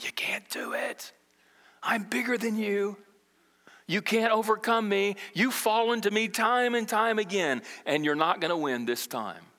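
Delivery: taunting whisper. Voicing what Satan whispers before we engage the enemy, in a whisper. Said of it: "he's whispering".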